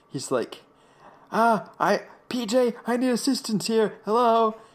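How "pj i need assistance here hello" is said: very slow, urgent, high, drawn-out put-on yelling. Retelling a story, acting out a man yelling at PJ: retelling someone yelling. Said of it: "he starts yelling at PJ".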